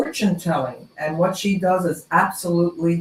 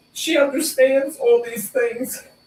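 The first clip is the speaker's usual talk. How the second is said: choked up, tearful, crying through words, voice breaking high; 7 semitones higher than usual. Speaking about a woman who prays with people, the speaker is crying. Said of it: "I'm crying".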